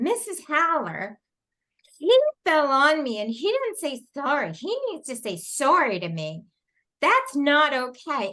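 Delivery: put-on bossy, sassy little girl voice, sing-song. Retelling what a little girl at circle said: imitating a sassy little girl. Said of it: "she was such a little sassy".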